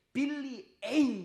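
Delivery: billi ein stressed: high, loud and slow.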